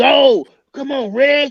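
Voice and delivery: mock hollering, high-pitched, like a bleacher shout. Asked what he does out there, answering by imitating Reg hollering. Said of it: "hollering and screaming".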